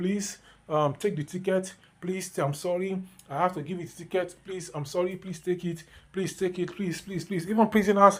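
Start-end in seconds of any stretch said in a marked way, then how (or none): 0.0-7.5 play-acted soft, gentle, begging, pleading tone. Acting out an officer handing out a ticket: imitating pleading in a soft tone. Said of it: "use soft tone words and plead".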